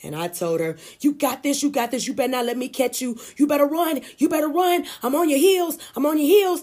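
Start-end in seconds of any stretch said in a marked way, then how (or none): 1.0-6.6 loud, high-pitched, fired-up encouraging shout. Retelling urging on a running girl near the finish line: retelling a scream. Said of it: "I screamed to her".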